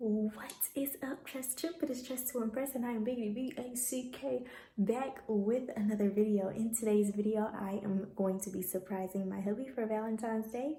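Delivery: very quiet, hushed, secretive half-whisper. Opening a video while her husband is in the other room, half-whispering. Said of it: "why I'm whispering".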